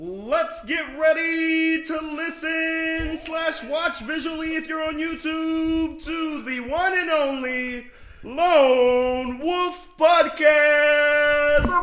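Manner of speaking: high, very loud ring-announcer voice, stretched-out "Lone". Put on the spot to introduce the podcast after a countdown, use a Bruce Buffer introduction voice. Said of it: "Bruce Buffer introduction right here".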